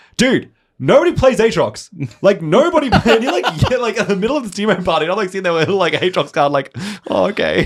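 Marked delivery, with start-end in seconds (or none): 0.2-2.9 acted, slow, high, drawn-out yell. Retelling how a guy at a team party yelled at him, retelling someone yelling. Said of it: "he like yells at me".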